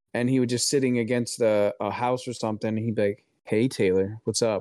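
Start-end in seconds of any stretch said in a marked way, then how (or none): 3.4-4.6 relaxed, too-cool, laid-back cool-cat tone. Retelling how a dream wolf greeted the speaker: imitating a Mister Cool Cat manner. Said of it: "acting like Mister Cool Cat".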